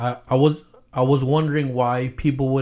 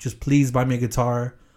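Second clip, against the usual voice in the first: mock begging, pleading tone. Retelling asking mom for a guitar while on crutches: imitating own begging. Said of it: "And I begged her".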